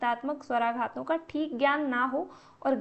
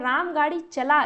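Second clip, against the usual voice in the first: strong stress on चला; 5 dB louder than usual. Hindi example where stress on चला makes the sentence a command. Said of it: "चला पर ज्यादा जोर दिया जा रहा है".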